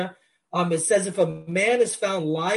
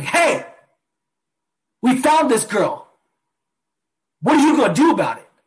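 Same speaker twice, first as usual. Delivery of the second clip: loud, pitched-up, angry, accusing, confrontational tone; 5 semitones higher, 8 dB louder than usual. Speaker acts out how people confronted Jesus, imitating an angry tone. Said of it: "That's the tone. That anger".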